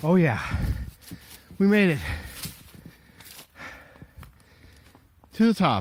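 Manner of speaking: slightly breathless, puffing a bit, winded. Reaching the top of a steep trail on foot: a little out of breath. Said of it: "a little out of breath".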